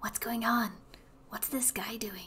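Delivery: very quiet, hushed whisper. Asking the Geldins quietly so Angry Dude won't notice: whispering in character. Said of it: "ask the, the Geldins in a whisper".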